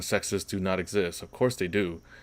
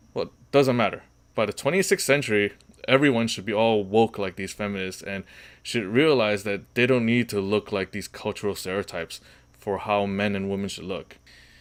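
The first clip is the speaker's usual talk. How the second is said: plain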